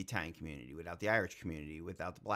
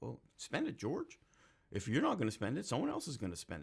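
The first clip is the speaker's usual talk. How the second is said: rough put-on voice, pitched up and swooping; 6 semitones higher than usual. Retelling words of an old boss at the FAA: imitating old boss. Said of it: "my limited impression of my old boss at the F A A".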